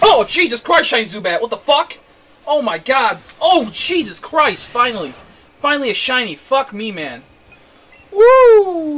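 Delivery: very loud, thrilled and shocked hollering. Finding a rare shiny in the game, yelling in excitement. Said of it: "Sorry about the yelling".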